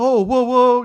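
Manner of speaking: squealed out in an innocent voice. Describing Mark Hamill's acting in the original trilogy: Pollyannish Mark Hamill impression. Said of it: "Mark Hamill in the original trilogy is very much, like, Pollyannish".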